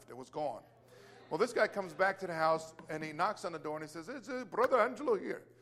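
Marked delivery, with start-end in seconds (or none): 4.1-5.3 put-on Indian accent, badly done. Speaker retelling a visitor announcing himself at the door, in bad Indian accent. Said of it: "just forgive my bad accent".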